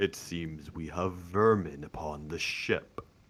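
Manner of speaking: deep, gravelly, grinding rumble like rock. Voicing a knight who noticed intruders on the ship: deep booming gravelly voice. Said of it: "gravelly laugh of magmic rock just smashing together in his voice".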